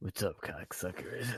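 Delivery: very soft, hushed, almost under the breath. Showing how Joey Diaz greets people: Joey Diaz impression. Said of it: "I can't do his gravelly voice".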